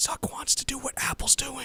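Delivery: very slow, hushed whisper. Revealing a secret to the listener while whispering. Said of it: "I'm gonna whisper it".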